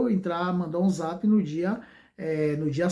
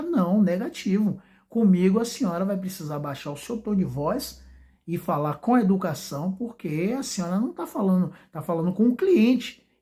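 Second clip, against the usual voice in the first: usual speaking voice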